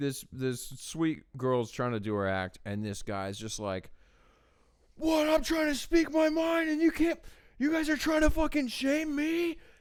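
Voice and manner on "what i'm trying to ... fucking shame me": screamed at a very high pitch. Retelling how a heckler at a comedy show screamed: imitating a man screaming. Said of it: "Just starts screaming".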